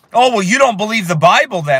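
ordinary talk

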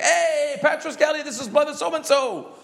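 very high, real, high-energy voice. Retelling a caller's phone greeting to the office, imitating a real high voice. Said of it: "He's like a real high voice".

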